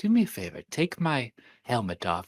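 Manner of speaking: small, soft, hushed voice under the breath. Talking with Jacob, the speaker quotes a man's moment in a soft little voice. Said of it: "he's this soft little voice of like".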